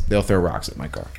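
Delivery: soft, deadpan, dead serious delivery. Retelling a man's reply when asked to see the king's house, deadpan. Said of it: "he was dead serious, deadpan".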